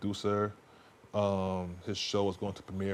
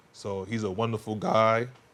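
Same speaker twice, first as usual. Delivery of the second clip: voice cracking; 5 dB louder than usual. Introducing a guest who helps with his show, voice cracking. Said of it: "Excuse my cracking in my voice".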